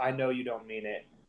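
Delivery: whispering. Hugging Tony and whispering in his ear. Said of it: "I whisper in his ear and I go".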